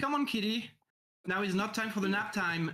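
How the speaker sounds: rousing, high, urging call. A player in a tabletop game shouts at the unconscious kitty while healing him. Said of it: "I'm going to to to shout".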